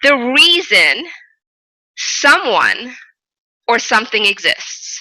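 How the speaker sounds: slow, halting, deliberate, drawn out, pausing inside phrases. Repeating a phrase for listeners to take in, said slowly. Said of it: "I want to say that slowly".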